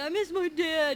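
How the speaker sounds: high, drawn-out, manipulative whining sob. Retelling how he whined when he didn't get his way: imitating someone crying. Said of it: "he would start crying and being like".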